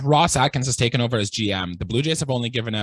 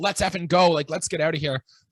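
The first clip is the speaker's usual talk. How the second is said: scream, much higher in pitch; 5 semitones higher than usual. Asking Riley about the series, retell Kevin Gausman's scream as he left the game. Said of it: "and he's screaming".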